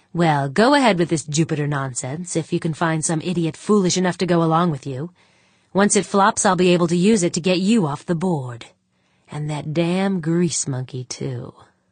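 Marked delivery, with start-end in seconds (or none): none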